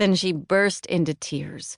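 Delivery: ordinary delivery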